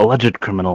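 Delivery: quiet muttering under breath. Speaking as a player character, reacting to a villain: muttering under breath. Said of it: "I mutter under my breath".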